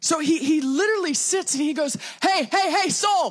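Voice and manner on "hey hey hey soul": calling-out voice, as if hailing. Acting out David speaking to his own soul: yelling. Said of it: "Sorry, I yell".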